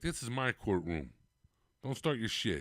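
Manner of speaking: put-on Italian-accented, courtroom judge-style voice. Retelling a judge's courtroom line, imitating him with an Italian-style delivery. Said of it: "that's how an Italian says it".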